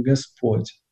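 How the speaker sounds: stress on Господь. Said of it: "мы делаем, а, акцент на слово «Господь»".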